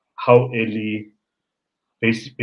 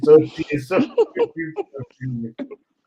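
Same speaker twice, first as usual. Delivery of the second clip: very high, slow cooing voice. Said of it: "but I'm like".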